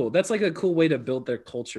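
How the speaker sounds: ordinary delivery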